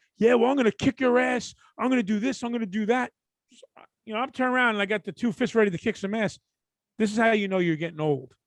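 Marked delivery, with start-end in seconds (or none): 0.2-3.1 toned-down, higher-pitched threatening hollering. Retelling hearing someone yelling threats outside: imitating a man yelling. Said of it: "I hear some dude yelling".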